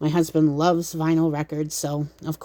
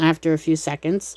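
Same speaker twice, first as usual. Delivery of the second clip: ordinary talk, nothing marked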